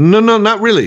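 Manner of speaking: very high, offhand, casual delivery. Imitating how the character talks in Empire: Lando's cadence. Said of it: "he pulled that cadence down that he has in Empire".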